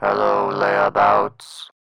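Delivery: distorted, disguised, electronically modulated voice. Greeting tied-up captives in a scene: modulated voice. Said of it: "a modulated voice?".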